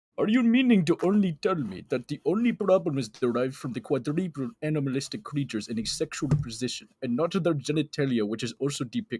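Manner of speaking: put-on Russian accent. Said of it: "That's Russian".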